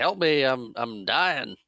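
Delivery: put-on yelling. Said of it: "yells to her to help him".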